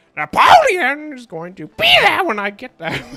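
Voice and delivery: very high, very loud, swooping, bird-like squawk. Retelling a movie scene, imitating the bird character: imitating a screaming bird. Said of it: "screaming when the bird screams, like".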